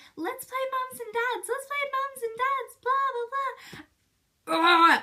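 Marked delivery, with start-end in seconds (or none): 0.2-2.8 very high-pitched, pestering, whiny little voice. Recalling a girl who annoyed the speaker as a child, imitating Emma's whiny little voice. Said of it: "Have this whiny little voice and she'd be like".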